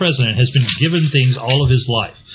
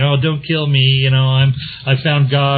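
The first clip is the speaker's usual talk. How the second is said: put-on mock-whining voice, slower. Retelling how Bush mocked a woman in an interview, use a put-on whiny voice. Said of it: "put forth a whiny voice saying".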